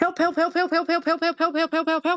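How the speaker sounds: shrill, rapid-fire, panicky, frantic high yelps. Telling a story, acting out him calling out: acting out frantic cries for help. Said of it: "and like he's frantic".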